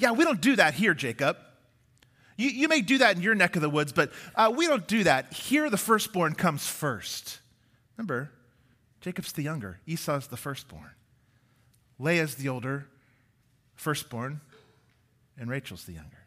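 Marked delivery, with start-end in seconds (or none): 0.0-7.4 dry irony acted out on every word. Retelling Laban's answer to Jacob about the firstborn: imitating Laban's ironic tone. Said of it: "You can hear the irony dripping".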